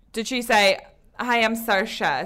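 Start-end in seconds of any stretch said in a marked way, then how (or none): 1.2-2.2 very bad attempt at an Irish accent. Mimic what she said in every Oscars interview, which you found very annoying: bad Irish accent as Saoirse. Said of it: "Was that an Irish accent you were doing just then?".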